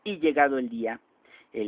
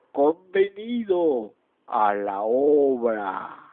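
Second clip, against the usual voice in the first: very slow, eerie otherworldly voice; 4 dB louder than usual. Narrating the answer to a man's desperate pact, in a voice from beyond the grave. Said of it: "Una voz de ultratumba".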